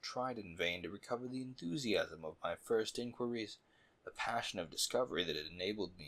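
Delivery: ordinary delivery, nothing marked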